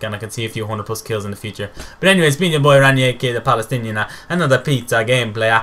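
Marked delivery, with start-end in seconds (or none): 4.3-5.6 bad, terrible, put-on Italian accent. Gamer signing off a gameplay video, in a terrible Italian accent. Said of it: "I'm such a terrible Italian accent".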